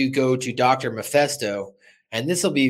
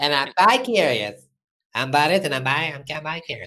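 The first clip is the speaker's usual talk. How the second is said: botched, stumbling put-on voice; 2 semitones higher than usual. Trying and failing to do a Butters voice: failed Butters impression. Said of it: "I can't do it, Butters".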